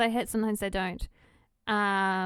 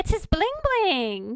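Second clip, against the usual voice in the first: very high, perky, happy voice; 9 semitones higher than usual. Quoting mum's response about the dog, imitating a perky voice. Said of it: "She sounds so perky".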